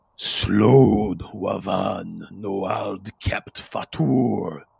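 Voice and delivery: deep, loud bellowing voice with a drawn-out word. Narrating to the players a voice they hear behind them, deep bellowing voice. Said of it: "in a deep bellowing voice".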